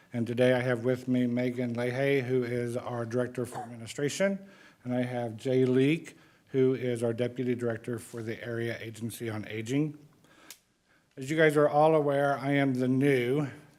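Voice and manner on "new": heavy stress on the word NEW. Introducing oneself to the commissioners as department director: stress on NEW. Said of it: "emphasize the word new".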